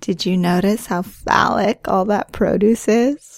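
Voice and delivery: playful, joking teasing tone. Heading through the farmer's market with the listener, teasing. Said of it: "I'm just teasing you".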